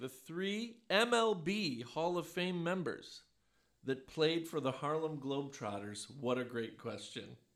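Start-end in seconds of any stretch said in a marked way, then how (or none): 0.0-6.1 very slow, deliberate, word-by-word, lifted delivery. Posing a trivia question to the others, saying it very slowly. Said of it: "I'm going to say it very slowly".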